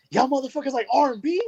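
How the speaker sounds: play-acted, shrill, very high-pitched holler. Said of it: "why are you yelling?".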